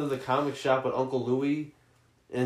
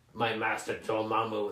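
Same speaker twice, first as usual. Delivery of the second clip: full old-school evil cartoon villain voice; 3 semitones lower, 6 dB quieter than usual. Recalling the villain from the Fox cartoon: Baron Mordo villain voice. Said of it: "that old evil voice actor".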